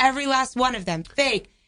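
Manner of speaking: ordinary talk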